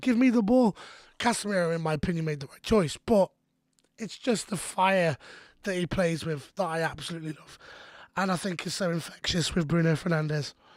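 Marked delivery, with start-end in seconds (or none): 0.0-0.8 play-acted, high-pitched, screaming tone. Retelling a player screaming at a teammate for the ball: imitating Bruno screaming. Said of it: "Bruno started screaming at him".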